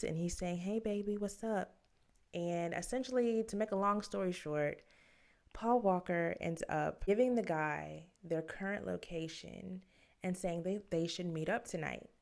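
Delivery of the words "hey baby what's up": put-on childlike girl's voice. Recounting a prank call, quoting the caller's greeting in a little girl voice. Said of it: "Paul Walker is back with the little girl voice".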